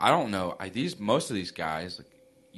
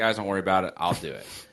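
usual speaking voice

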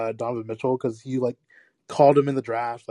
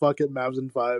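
usual speaking voice

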